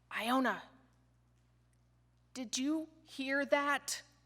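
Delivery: acted-out terrified, trembling, quivering frightened voice. Retelling a kid's question after hearing a large creature: imitating a terrified quivering voice. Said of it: "a terrified, quivering voice saying".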